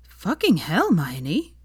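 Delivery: stunned, breathy, shocked, under the breath. Veronica reacts to hermione's admission about falling into the canal, breathed, stunned. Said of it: "breathed Veronica, stunned".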